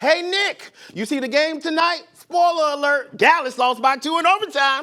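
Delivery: loud high-pitched yelling.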